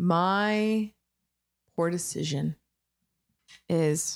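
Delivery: slow, drawn-out, stretched "My" at the start. Asked to name her poor decision, with no idea yet: slow, drawn out. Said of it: "She's saying it slow".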